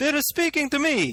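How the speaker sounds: put-on Italian accent. Host imagines their one listener in Poland reacting; stereotypical Italian accent. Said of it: "A stereotypical Italian accent".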